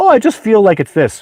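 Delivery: high, loud, mock vague manner.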